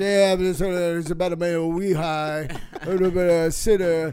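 loud, indistinct, garbled mumble, words run together. Quoting a man who brings him up on stage, imitating him mumbling.

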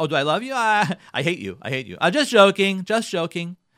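loud, sarcastic, teasing jab of a tone. Acting out a spouse answering "do you love me": imitating someone being sarcastic.

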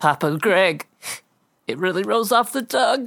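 weeping openly through the words. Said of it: "I am crying openly".

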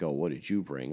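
snarky, snide, pointed tone. Retelling what a guy said when he came over, imitating his snarky question. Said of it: "real like snarky".

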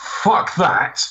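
blurted, mild startled exclamation, held in check. Retelling a moment in the cinema when the creature appeared: retelling own shout. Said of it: "I literally shouted".

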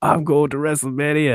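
high-pitched shout, yelled straight out. Retelling a wrestler's line to his opponent: imitating someone shouting. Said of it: "he just shouts at his face".

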